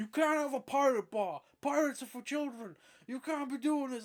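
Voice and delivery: high, shrill, blaring, loud shouting. Retelling how someone shouted at the bar owner: imitating someone shouting. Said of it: "shouting at her".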